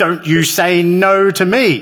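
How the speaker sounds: mock defiant child's shout, high-pitched. Recounting how the boy reacted when denied cheese, retelling a child's shout. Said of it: "and he shouted".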